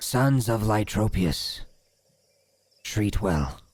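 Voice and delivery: strange creature voice. Repeating the creature's line when a player asks: voicing a green-skinned creature. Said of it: "Can you say that again?".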